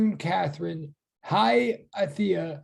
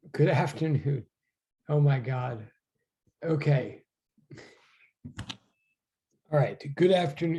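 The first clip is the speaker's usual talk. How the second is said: words broken up by laughter; 5 semitones lower than usual. Greeting the class at the start, laughing while talking. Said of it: "I'm laughing for so many reasons".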